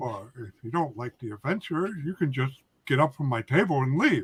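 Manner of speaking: deadpan, serious, humorless delivery. Retelling what someone said to the group, retelling a deadpan line. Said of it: "in deadpan, serious, says".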